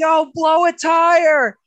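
very loud, very high, very slow yell, "tire" drawn out. Retelling yelling in the grandstands at a race: imitating own past yell. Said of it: "and I'm yelling".

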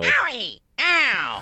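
very high yelps that sound hurt. Crying out in pain as Waluigi: Waluigi voice. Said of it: "That's Waluigi sounds".

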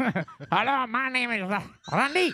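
put-on high French accent with mouse-like voice. Redoing a voice bit on a podcast, as a french mouse. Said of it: "It was a French mouse".

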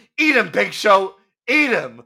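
loud, high commentator-style yelling. Retelling a commentator's call during a match, imitating Michael Cole yelling. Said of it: "on commentary starts yelling".

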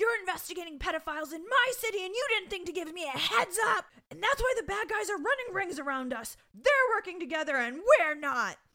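put-on, very high, shrill, furious screaming rant. Retelling how the other man screamed back in an argument, retelling angry screaming. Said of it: "So he starts screaming back".

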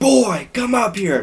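put-on very high, stretched-out, drawn-out screaming yell. Retelling waking up to a friend's dad screaming upstairs: imitating a dad screaming. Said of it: "his dad just screaming".

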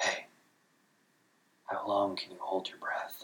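hushed whisper, close up. Narrator tilts head back to ask a companion in the still swamp, whispering. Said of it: "I tilted my head back and whispered to Gaz".

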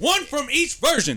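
very high, shrill, yelled outburst. Arguing over a movie list in a debate round, yelling. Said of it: "I'm sorry, I'm yelling".

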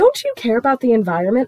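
uptight, swooping customer-service voice. Recalling her really uptight past self questioning people: high customer-service voice. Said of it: "I had a really high customer service voice. And I'd be like".

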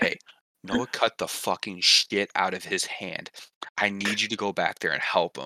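mock whispering. Retelling a coworker quietly pulling them aside: imitating someone whispering. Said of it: "he starts whispering".

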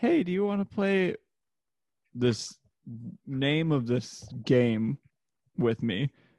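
put-on childlike little-girl voice. Retelling a spam phone call, imitating a little girl's voice. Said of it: "like, a little girl's voice".

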